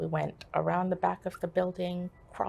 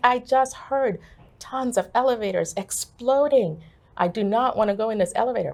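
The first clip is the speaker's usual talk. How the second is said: loud, yelled, screaming voice; 4 semitones higher, 9 dB louder than usual. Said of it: "I remember screaming at them".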